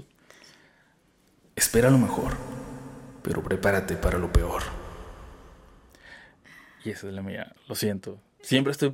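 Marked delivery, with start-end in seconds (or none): 0.0-4.6 spooky, low-pitched storyteller narrator voice. Sharing own personal motto; storyteller voice. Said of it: "bueno pero con voz de relatos".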